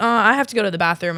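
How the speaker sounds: usual speaking voice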